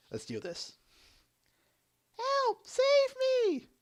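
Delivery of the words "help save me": terrible, very high, loud, shrill princess voice. Reading out a commissioned comic with voices for viewers: terrible princess impersonation. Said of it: "ready for my terrible impersonations".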